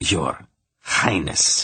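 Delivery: snarling through clenched teeth. Reading a story aloud, the Emperor answering his daughter: snarling through clenched teeth. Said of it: "he snarled, from between clenched teeth".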